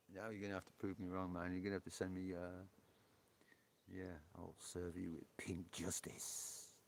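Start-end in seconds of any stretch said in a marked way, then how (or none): 4.3-6.6 slow, breathy, hushed, whispered superhero voice. Teasing someone about how they might really talk, using a Pink Batman voice. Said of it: "I bet you don't talk like that though".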